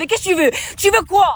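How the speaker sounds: accent from Corsica. A Corsican shows how locals can talk on some days: strong Corsican accent. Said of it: "on peut parler comme ça".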